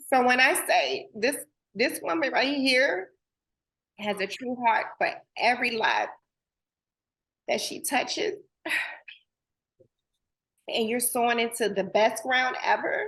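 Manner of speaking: tearful crying voice with joy. Praising a woman in front of others, the speaker talks while crying. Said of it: "I hate that I'm crying right now".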